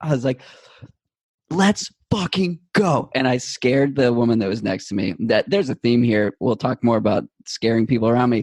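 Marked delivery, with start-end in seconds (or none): 1.5-3.1 very high, loud, pumped-up, amped-up scream. Retelling the race, screaming under a bridge: imitating own scream. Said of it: "I just start fucking screaming so loud".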